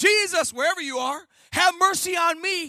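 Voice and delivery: loud, high crying out. Retelling the Bible story, acting out blind Bartimaeus, retelling a loud cry out. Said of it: "blind Bartimaeus cried out".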